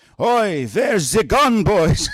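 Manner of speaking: put-on Yiddish accent with a German edge.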